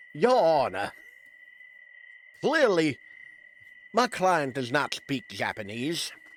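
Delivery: loud, blustery, showboating lawyer voice. Playing a curse lawyer addressing the judge: Foghorn Leghorn lawyer voice. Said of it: "That's my lawyer voice, by the way. Froghorn Leghorn, pretty much".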